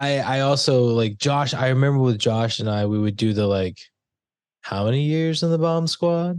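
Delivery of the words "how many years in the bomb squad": snide, sarcastic tone. Quoting a movie line with friends: imitating a sarcastic movie line. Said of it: "that's just the sarcastic ass".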